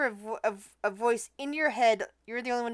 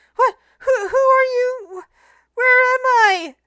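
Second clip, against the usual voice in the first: put-on small girl voice, much higher, louder, slower; 14 semitones higher, 12 dB louder than usual. Narrating a strange voice that Jasper suddenly hears: Nepertak small girl voice. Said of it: "it's a voice of a small girl".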